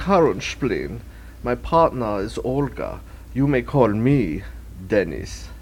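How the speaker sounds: put-on European accent. A character introduces themself and a partner, in a fake European accent. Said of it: "You are European".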